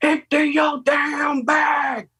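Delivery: very high, very slow drill sergeant yell, top of lungs. Retelling a drill sergeant's order to empty the bag: imitating a drill sergeant shouting. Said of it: "at the top of his lungs".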